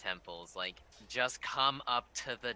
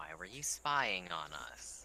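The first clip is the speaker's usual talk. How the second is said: very calm, composed, low and soft voice; 4 semitones lower, 6 dB quieter than usual. Player character questions a terrified captive in a cage, in a very calm voice. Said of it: "in like a very calm voice".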